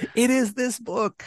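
mock, very high, very slow, drawn-out shout. Imitating the other speaker's librarian mother naming the book: imitating someone shouting. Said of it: "She's, like, shouting. She's like".

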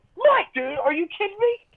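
mock screaming, very high, loud and shrill. Retelling how a guy screamed his name at him, retelling a scream. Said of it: "And he's screaming Mike".

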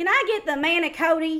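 put-on high Tennessee accent. Describing a friend saying Italian words, the speaker mimics her Tennessee accent. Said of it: "try to sound Italian words out in her Tennessee accent".

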